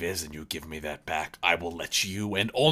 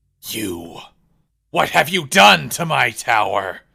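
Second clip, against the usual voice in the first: very loud, raspy, furious wizard roar; 6 semitones higher, 12 dB louder than usual. The narrator voices a wizard confronting the players about his tower: angry wizard shouting. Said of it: "you see a wizard uh".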